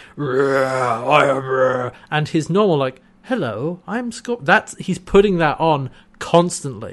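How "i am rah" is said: put-on guttural alien voice, much slower. Explaining a character's true voice to a co-host, imitating it: guttural Scorpius voice. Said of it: "His natural voice is guttural".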